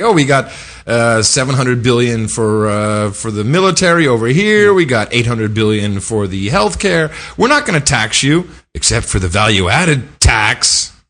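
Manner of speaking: ordinary talk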